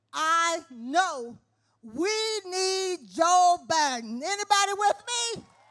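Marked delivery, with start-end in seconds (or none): 0.2-4.2 very slow, deliberate, every word spaced out. Addressing an audience about her community, said real slow. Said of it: "I'm going to say that real slow".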